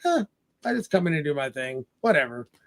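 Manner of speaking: nonchalant, offhand tone. Retelling a movie scene where another employee answers consultants: imitating a nonchalant character. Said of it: "just all nonchalant".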